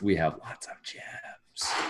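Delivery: slow, hushed, half-breathed whisper. Mentioning to the others that they have lots of gems: whispering. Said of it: "That's why I whispered it".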